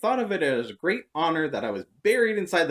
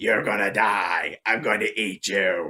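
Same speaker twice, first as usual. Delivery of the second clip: possessed demon voice, dropped low; 6 semitones lower than usual. Retelling how the speaker messed with her, in a demonic voice. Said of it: "I started talking to like this demonic voice".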